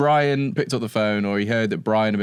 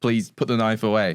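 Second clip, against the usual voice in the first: imitated pleading tone. Retelling how the victim begged a robber: imitating pleading. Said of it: "he's pleaded".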